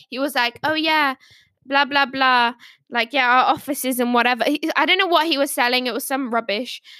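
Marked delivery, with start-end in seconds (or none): 0.6-4.4 put-on South African accent. Retelling what a salesman said to her, in a south african accent. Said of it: "he had like a South African accent".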